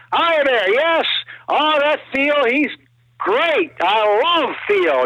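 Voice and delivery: very high, drawn-out, chatty schmoozing voice. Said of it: "that kind of Steve worked the plane".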